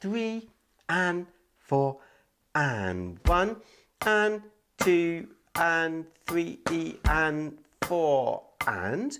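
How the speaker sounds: slow, drawn-out counting in a steady beat.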